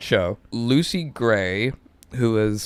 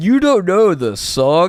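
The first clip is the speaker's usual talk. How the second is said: mock, loud, high-pitched blurt; 8 semitones higher, 5 dB louder than usual. Retelling a friend's loud remark in a quiet crowd: imitating a loud remark. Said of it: "Blake loudly goes".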